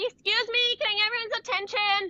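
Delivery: very high put-on voice. Coaching on microphone use, showing what not to do: pitching voice up. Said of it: "not pitching your voice up here".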